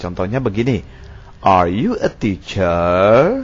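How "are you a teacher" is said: pitch rising up on teacher. Showing that yes-no questions end with a rise: rising at the end on teacher. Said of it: "Rasakan naik teacher".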